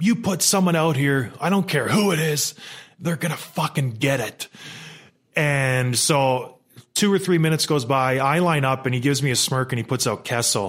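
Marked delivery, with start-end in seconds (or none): 0.0-4.5 put-on shouting. Player recalling what he said to a coach he disliked, retelling a yell. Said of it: "And I started yelling at him".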